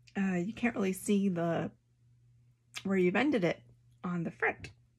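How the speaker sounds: speaking with hiccups between words. Speaker describing a thread-ending technique she saw in a video, hiccuping. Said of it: "Excuse me, keep hiccuping".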